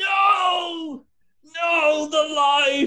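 agonised, very high, loud, drawn-out shriek. A game master voices a man being wrapped in gauze, screaming. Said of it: "he's screaming".

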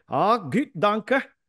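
put-on very high, loud, very thick Doric accent. Telling about fans in a queue, quoting one guy: thick Doric accent. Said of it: "in a very thick Doric accent that just said".

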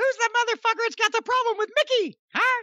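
very high cartoon mouse character voice. Joking about Disney employees storming the wrestling show: Mickey Mouse voice. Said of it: "That's a good Mickey".

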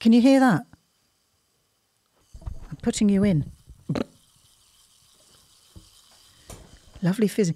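voiced ASMR-style stage whisper. Asked to do an asmr review of a drink, speaker does an asmr half-whisper. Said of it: "do an ASMR review of the drink".

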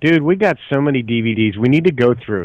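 ordinary talk

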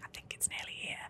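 barely-there, very quiet, breathy whisper. Describing sitting in the dark as something approaches: retelling a whisper. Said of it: "you're whispering going".

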